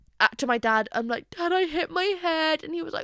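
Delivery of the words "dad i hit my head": put-on high, slow sobbing and blubbering like a baby. Retelling what he said to his dad, speaker acts out sobbing like a baby. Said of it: "I'm like sobbing, sobbing like a baby".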